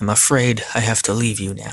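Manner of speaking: plain reading voice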